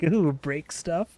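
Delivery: slow, drawn-out, devious, gleeful little-smile voice. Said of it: "The devious little smile".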